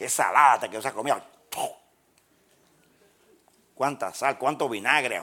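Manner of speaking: acted-out contempt and mock disdain. Acting out someone spitting out a salty meal, with mock disdain. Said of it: "escupe despectivamente, con desdén".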